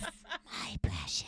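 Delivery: whispered, breathy creature-like voice. Giving in after the others urge a golem impression: Gollum voice. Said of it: "I really wanna do my golem impression".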